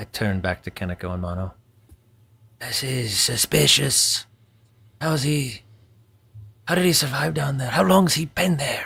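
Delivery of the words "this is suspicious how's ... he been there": hushed whispering voice, higher pitched. Turning back to companions about the stranger below: whispering in character. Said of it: "As I whisper".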